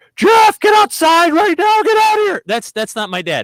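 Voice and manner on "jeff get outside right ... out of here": very high, loud, shrieking scream. Retelling how their dad screamed from outside at night, imitating someone screaming. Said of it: "he starts screaming bloody murder".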